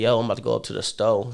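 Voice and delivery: put-on Los Angeles accent. Retelling an actor's interview line in his American accent: imitating a Compton accent. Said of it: "He took me down to Compton".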